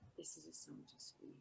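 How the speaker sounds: very quiet, soft, breathy whisper. A player's character speaks into her ear, just for her, whispering. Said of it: "He whispers it".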